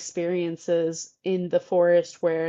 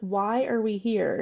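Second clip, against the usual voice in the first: put-on slow, angry, cranky four-year-old tantrum; 3 semitones higher than usual. Imitating a young child in a documentary: imitating a mad child's tantrum. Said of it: "He would just get really mad and throw a temper tantrum".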